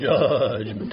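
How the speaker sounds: put-on, showy, broadcast-style radio announcer voice. Mimicking how they always say the word judgment: radio voice. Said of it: "They got to get the voice in it. ... That's the radio voice".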